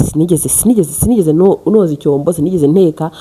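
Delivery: ordinary talk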